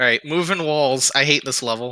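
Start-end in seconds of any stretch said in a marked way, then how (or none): none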